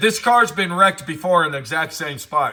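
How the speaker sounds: usual speaking voice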